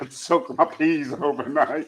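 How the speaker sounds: slow speech through giggles. Answering a question about soaking chickpeas overnight, giggling while talking. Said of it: "I don't know why I'm giggling".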